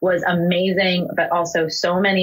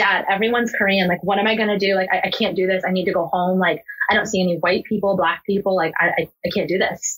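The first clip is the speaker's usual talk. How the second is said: put-on tearful, crying voice. Retelling a call to dad on the flight: imitating own past crying. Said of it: "Calling my dad crying that".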